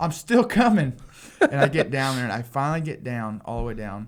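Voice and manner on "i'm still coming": put-on very high, loud carrying shout. Retelling running down the balconies to the stage: imitating someone yelling. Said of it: "and I'm yelling".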